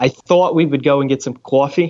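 New York-sounding accent. Showing off accents, speaker demonstrates how New Yorkers say coffee, in a New York accent. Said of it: "New Yorkers say coffee instead of coffee".

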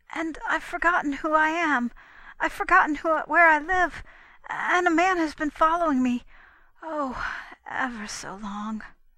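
drained, exhausted, weary tone. A girl who hurried up to Constance Dunlap tells her this, in a weary tone. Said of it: "The weariness in the tone of the last words".

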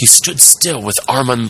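plain

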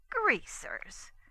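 half-whispered, breathy, contemptuous, scornful exclamation. Narrator reads a girl exclaiming back at the sheriff, scornful exclamation. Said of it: "she ejaculated scornfully".

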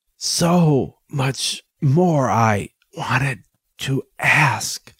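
very slow, gasping, gasped-out words. Ness, barely able to bear the effort of talking, speaks to the doctor; gasping. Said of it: "Ness gasped".

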